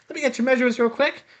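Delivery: high little pixie voice. Voicing a pixie quartermaster greeting the party: pixie quartermaster voice. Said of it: "A pixie".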